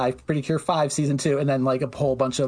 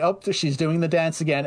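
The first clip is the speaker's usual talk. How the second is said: normal talking voice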